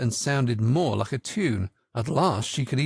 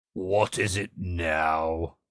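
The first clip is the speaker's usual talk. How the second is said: hoarse character whisper, much lower, slower; 8 semitones lower than usual. Narrator reading the Frog's question to Alice, Frog's deep hoarse whisper. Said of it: "the Frog said in a deep hoarse whisper".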